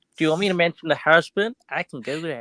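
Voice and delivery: put-on American accent like an old-time seller. Asked to do it again, repeat the line in a put-on american accent. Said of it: "Can you do it again?".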